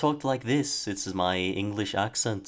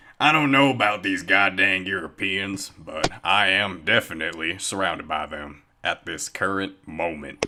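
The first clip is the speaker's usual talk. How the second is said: raised, played-up put-on cowboy western accent; 5 dB louder than usual. Asking the other speaker to try the Western voice, demonstrating it in a Western voice. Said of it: "the Western one where it's like".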